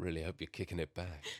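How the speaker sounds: smooth, sweet put-on voice. A podcast host welcomes listeners to Easy Like Sunday Evening, in slightly more dulcet tones. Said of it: "talk in slightly more dulcet tones".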